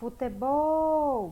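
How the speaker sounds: futebol with last syllable bol long and drawn out. Teacher calls out futebol like calling a friend far away, stretching bol. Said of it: "Eu vou chamar assim... Foi aqui no bol... Essa é a sílaba em que eu me demorei mais".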